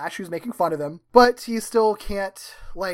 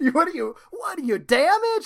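exaggerated New York accent, higher, slower; 8 semitones higher than usual. Recapping a show, the speaker quotes a cheerleader rejecting a date: Sally Avril's New York accent. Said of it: "I can't even do her accent".

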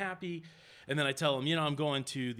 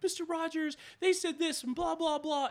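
put-on very high, playful small-child voice. Retelling radio hosts pretending to be little kids: imitating a little kid voice. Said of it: "they were playing like they were little kids".

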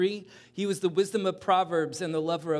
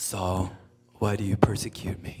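hushed, breathy, heavenly whispered call; 9 semitones lower than usual. Telling the story of Saul's conversion, voicing the call to him: booming voice from heaven. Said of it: "in this booming voice from heaven".

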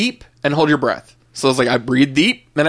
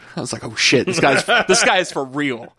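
ordinary delivery

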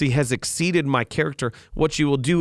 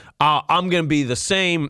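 slow put-on good old boy voice, laid on lightly. Imitating what people say about having character: imitating a good old boy voice. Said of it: "I sound a little like g-, good old boy".

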